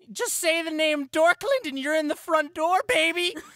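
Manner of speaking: very loud, very high, shrill crowd-like screech. Standing on a fountain calling attention to the tavern: screeching to the crowd. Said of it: "would begin screeching".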